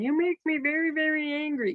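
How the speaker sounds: high-pitched cartoon Martian character voice. Showing what overdone vocal variety sounds like: Marvin the Martian voice. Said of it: "go all Marvin the Martian".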